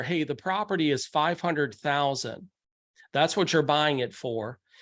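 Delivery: ordinary talk, nothing marked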